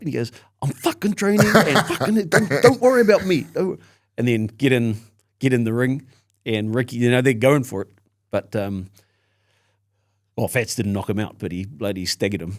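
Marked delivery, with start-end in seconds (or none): 0.6-3.4 very high-pitched, raised, pissed-off outburst. Retelling how a boxer snapped back when asked about training: imitating Fats getting pissed off. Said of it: "he got pissed off".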